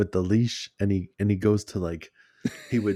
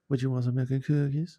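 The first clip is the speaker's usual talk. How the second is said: strange, oddly phrased, offbeat delivery; 4 semitones higher, 4 dB quieter than usual. Retelling offering the son a snack: imitating own weird way of talking. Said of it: "Why you have to say it so weird?".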